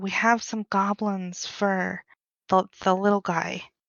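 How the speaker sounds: soft, hushed half-whisper. Speaking in character, telling Tammy about the goblin fur: half-whispering in character. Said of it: "I'm gonna whisper to her".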